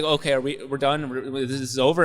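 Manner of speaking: ordinary talk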